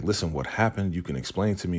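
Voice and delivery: ordinary talk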